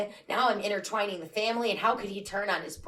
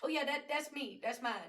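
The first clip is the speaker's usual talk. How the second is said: put-on casual, offhand, nonchalant delivery, pitched up; 5 semitones higher, 8 dB quieter than usual. Acting out Kalyan casually admitting he is the baby's father: imitating Kalyan's nonchalant tone. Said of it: "so nonchalant about it".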